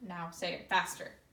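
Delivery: ordinary talk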